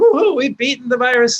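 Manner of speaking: fake cheerful sarcastic tone. Repeating the line to listeners who might miss the irony, to show how hollow the cheering is. Sarcastic mock cheer. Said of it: "this is sarcasm for the sarcasm impaired".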